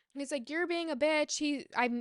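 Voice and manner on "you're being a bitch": mock furious, high-pitched angry yell. Retelling a fight, quoting a partner: imitating someone yelling angrily. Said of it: "yelling at me".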